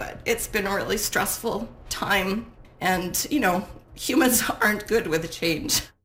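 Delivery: voice welling with emotion. An interviewee apologizing mid-answer, getting emotional. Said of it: "I'm sorry I'm getting emotional".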